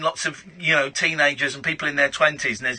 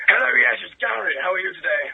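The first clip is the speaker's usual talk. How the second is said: creaky, rough-edged, put-on upper-crust posh accent; 4 semitones higher than usual. Calling in to a radio show as Gary: posh voice. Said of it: "it was a good posh voice".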